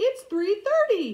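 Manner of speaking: cartoon voice, way up high and loud. Retelling a dream where Cap answers a request for orders, in a Mickey Mouse voice. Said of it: "In a Mickey Mouse voice".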